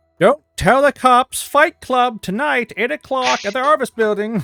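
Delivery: very high, loud, joking announcer's call. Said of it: "it's very loud underground".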